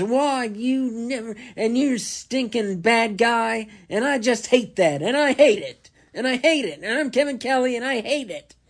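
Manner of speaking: very high, loud, put-on indignation. Complaining about how he talks at his job, imitate Kevin Kelly's fake outrage. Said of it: "that fake outrage, and he talks like this".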